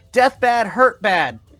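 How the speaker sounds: high, loud, squeaking, dim-witted rat voice. Voicing a rat that squeaks at a player: squeaking rat voice. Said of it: "he's squeaking at you".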